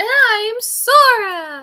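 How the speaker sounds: very bad, shrill, drawn-out voice. Introducing oneself in character, in a bad Sora impression. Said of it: "That was a very bad impression of her".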